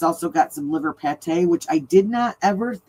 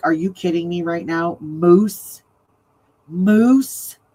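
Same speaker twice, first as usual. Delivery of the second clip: put-on shocked, freaked-out outburst. Retelling a friend's reaction to eating moose: imitating someone freaking out. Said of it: "she flipped out".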